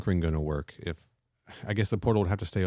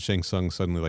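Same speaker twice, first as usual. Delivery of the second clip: ordinary talk, nothing marked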